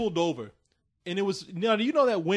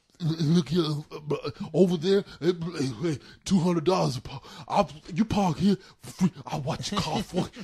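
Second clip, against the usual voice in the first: put-on slobbery speech with spitting. Retelling what a parking man said while spitting: imitating a man spitting while talking. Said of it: "So he comes over and he's like".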